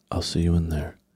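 put-on calm, low voice. Retelling how someone said goodbye before going in, imitating Ariel's low, slow voice. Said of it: "her voice was low. It was slower".

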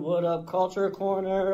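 ordinary talk, nothing marked

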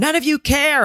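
very high, accusing screaming. Retelling how a mom screams at everyone at a party: imitating someone screaming. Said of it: "she screams at everyone".

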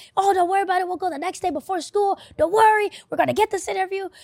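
mock encouraging, hyped-up voice. Retelling how their dad encouraged them in the car, imitating dad hyping them up. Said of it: "he was hyping me up".

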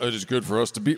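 deep voice, pitch dropped right down. Retelling what Peter says on the mountain: deep Peter voice. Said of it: "how do you know his voice was that deep?".

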